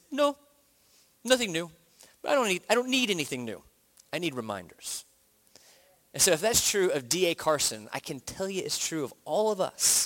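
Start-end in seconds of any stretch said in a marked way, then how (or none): 0.1-5.0 put-on stoic, unemotional voice with a Canadian accent. Retelling a former professor's reply when asked about learning anything new: D A Carson's stoic Canadian accent. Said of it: "in his, like, stoic Canadian accent".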